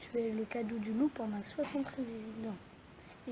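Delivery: plain reading voice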